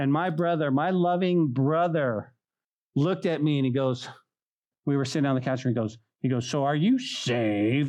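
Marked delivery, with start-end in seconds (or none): 6.5-7.9 play-acted slow, taunting, teasing, mocking delivery. Retelling what an older brother asked on the couch, imitating a mocking tone. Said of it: "he did it mockingly".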